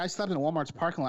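ordinary talk, nothing marked

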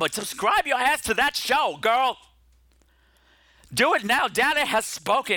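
passionate shouting, voice shooting up high-pitched. Urging listeners to subscribe to another show: yelling. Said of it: "I'm sorry for yelling at you".

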